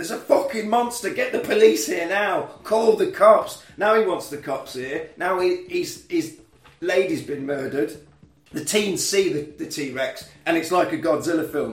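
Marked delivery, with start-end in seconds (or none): 0.0-3.6 acted-out, loud, frantic, alarmed screaming. Retelling a film scene where a character runs back to a party: imitating someone screaming. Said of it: "he's screaming".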